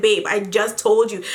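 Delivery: ordinary delivery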